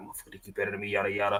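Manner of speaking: very quiet, low, hushed muttering under the breath. Imitating someone cursing at him, imitating someone muttering under their breath. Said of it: "talking, like, under their breath".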